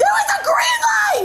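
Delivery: high-pitched, panicked yelling. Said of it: "Why are you yelling?".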